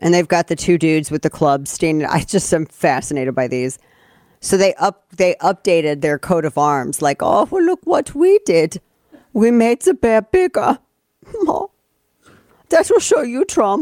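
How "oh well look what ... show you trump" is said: rough, very high put-on Danish accent. Voicing the makers of an updated coat of arms, in an inaccurate Danish accent. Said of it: "It's not probably the most accurate Danish accent".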